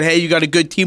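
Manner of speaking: plain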